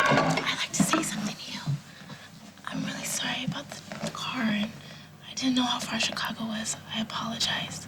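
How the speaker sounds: hushed whisper kept under the breath. Character speaking to Casey in front of others, whispering. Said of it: "Why are you whispering?".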